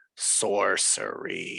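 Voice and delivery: low, deep, rough growling voice. Voicing a voice heard in the back of the mind: deep growling voice. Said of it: "a deep growling voice that says".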